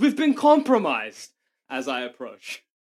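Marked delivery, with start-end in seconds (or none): 0.0-1.3 very high, alarmed screaming. Playing a character who runs to the militia HQ: screaming. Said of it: "I'd like to start screaming".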